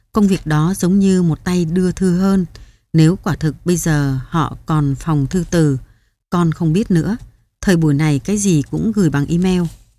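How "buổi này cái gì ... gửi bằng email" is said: ordinary delivery, nothing marked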